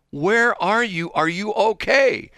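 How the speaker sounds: mock worried, very high, slow and drawn out. Retelling a phone call to someone late for a meeting: imitating own concerned voice. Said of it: "You could hear the concern in my voice".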